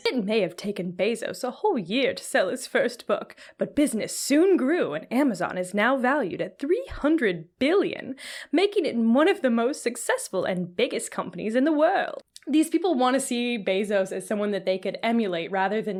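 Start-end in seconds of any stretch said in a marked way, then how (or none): 0.1-12.2 poorly done, bad put-on British accent. Reading more of the article aloud in a bad put-on British accent. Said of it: "I'm doing the accent still".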